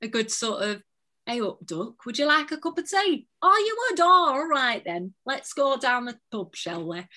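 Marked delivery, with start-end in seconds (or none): 1.3-7.0 friendly put-on northern England accent. Speaker shows off accents they love, doing a northern English accent. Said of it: "I love a good northern one as well".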